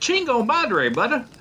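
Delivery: Spanish with country twang.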